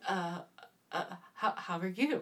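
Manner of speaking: put-on nervous, stammering delivery. Retelling a customer stammering at the bar: imitating a nervous customer. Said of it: "he was a nervous Nelly".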